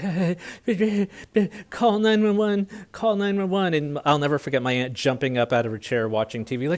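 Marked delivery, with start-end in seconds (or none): 0.0-3.5 mock very high, breathless, frantic hysterical panic. Retelling bursting in and telling an aunt to call 911: imitating own hysterical panic. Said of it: "I was out of breath, hysterical".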